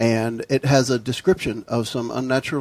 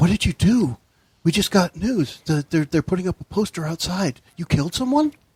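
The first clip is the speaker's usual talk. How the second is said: secretive, confidential tone with raised pitch; 5 semitones higher than usual. A server comes over to the table to talk to a player, in a hushed voice. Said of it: "she's speaking in a hushed voice".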